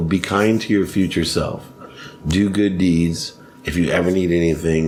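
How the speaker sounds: usual speaking voice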